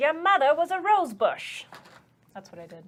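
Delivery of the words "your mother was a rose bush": put-on very loud, high, old-fashioned voice. Taking the enemies' turn in a game, voicing one of them: old-timey voice. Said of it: "In that old-timey voice".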